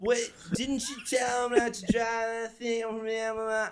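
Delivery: put-on very high drunken yelling. Retelling what a drunk woman yelled across their lap at a hockey game: imitating a drunk woman yelling. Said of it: "and she's just yelling".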